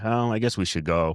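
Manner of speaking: calm, unhurried, unpanicked, low-key, quiet voice. Retelling a past moment, not panicked, re-enacting a low, unpanicked tone. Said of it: "it wasn't like panicked. It was like just a low tone".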